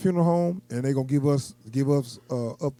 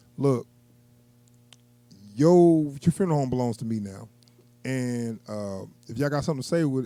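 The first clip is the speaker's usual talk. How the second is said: ordinary talk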